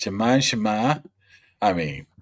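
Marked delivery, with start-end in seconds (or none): 0.0-1.0 Boston-accented. Asked about the accent, repeating the player's name in a Boston accent. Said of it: "what's with the Boston accent when you say".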